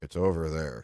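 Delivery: low mutter, under the breath. Retelling what a guard quietly told a tourist: imitating someone muttering under his breath. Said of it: "under his breath, he goes".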